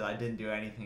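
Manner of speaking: normal talking voice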